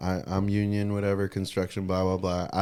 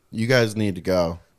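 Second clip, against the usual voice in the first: ordinary delivery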